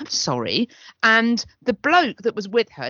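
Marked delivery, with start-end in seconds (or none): 0.0-0.7 stunned, shocked, startled, caught-off-guard voice. Retelling how a woman answered after being asked to stop talking: imitating a shocked reply. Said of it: "looked really shocked and went".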